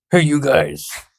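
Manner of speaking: high-pitched, tiny, toy-sized monster voice. Voicing a tiny Krampus greeting the others: Bowser voice. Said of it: "Like Bowser in the new Mario Brothers trailer".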